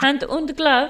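put-on German accent. Repeating another speaker's phrase back at them, in a put-on german accent. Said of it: "I was saying it in a German accent".

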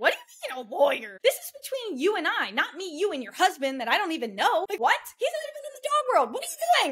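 mock, very high, rising, heated angry rant. Retelling an angry reply to a texted request: retelling own angry outburst. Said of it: "And so I popped off".

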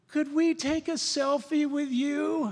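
cooing, pitched very high. Speaker retells two young women asking him for a selfie, imitating their coo. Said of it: "they were sort of cooed".

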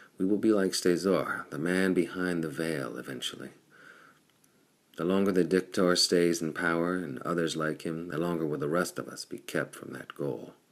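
ordinary delivery

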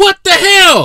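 very high, very loud, shrill yelling outburst. Looking up both teams' records from that season, the speaker reacts: yelling. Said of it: "I'm sorry for yelling".

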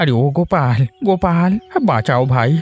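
high, breathless, panting, out-of-breath voice. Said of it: "আপনি এভাবে হাঁপাচ্ছেন কেন?".

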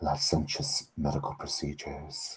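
put-on voice, whispering quietly. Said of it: "she continues whispering to you".

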